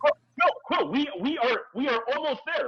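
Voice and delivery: very high, urgent, pressing, pleading voice. Recounting a scene, acting out one character pleading with another. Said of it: "Like he is pleading with him".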